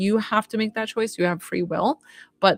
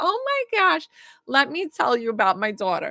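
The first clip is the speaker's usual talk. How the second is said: animated, put-on New York accent; 6 semitones higher than usual. Speaker acts out a woman inviting her in, new york accent. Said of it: "that's why I'm doing a New York accent".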